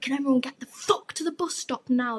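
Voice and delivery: on-edge, urgent shouting. Retelling yelling at a group after a tense situation, retelling shouting at everyone. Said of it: "So I'm like shouting at everyone like".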